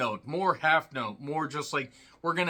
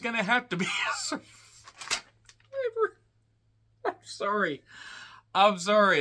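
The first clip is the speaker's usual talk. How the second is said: words breaking into swooping laughter; 5 semitones higher than usual. Reviewing a film after cracking a joke: laughing while talking. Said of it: "I'm trying to contain my laughter here".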